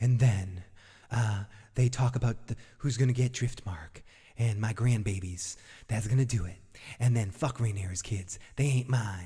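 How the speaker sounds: dramatic, put-on storytelling narrator voice. Speaker recapping an episode's scene, dramatic recap voice. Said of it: "I got to do my recap voice like this".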